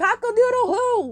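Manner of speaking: mock loud call. Retelling the joke after being asked to say it louder: imitating Gil saying it louder. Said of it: "Can you say it a little louder?".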